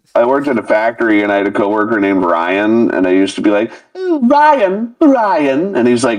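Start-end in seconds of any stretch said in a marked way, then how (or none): 3.9-5.7 very high, swooping, campy cooing voice. Retelling how they used to call out to a factory coworker named Ryan; put-on voice calling Ryan. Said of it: "you are too fucking good at that voice".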